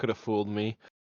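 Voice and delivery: low, mumbled, muttered under the breath. Replying to the old man's claim he's not deaf: muttering under breath. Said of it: "I mutter under my breath".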